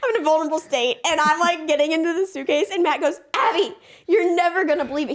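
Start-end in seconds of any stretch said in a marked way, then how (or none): 3.3-5.2 mock, bursting, eager, enthusiastic excitement. Retelling a friend's news shouted while running upstairs: imitating Matt, enthusiastic. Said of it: "He's so enthusiastic".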